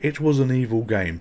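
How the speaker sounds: ordinary talk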